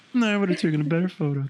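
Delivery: mock high cartoon frog puppet voice. Mocking someone who competitively judges others' photos, in a mock Kermit the Frog voice. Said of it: "Not that that's what your voice would sound like".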